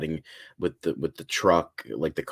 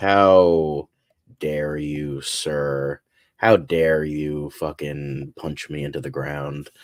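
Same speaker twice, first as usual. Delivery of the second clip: very slow, loud, stern scolding, drawn-out "how"; 6 dB louder than usual. Describing a set photo of a figure wagging his finger: imitating Superman scolding. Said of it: "wagging his finger, like".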